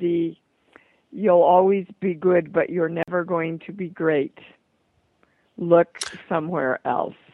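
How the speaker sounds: put-on thick German accent. Quoting the speaker's dance teacher's advice, in a thick German accent. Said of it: "in her thick German accent and said".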